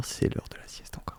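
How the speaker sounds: soft, hushed whisper.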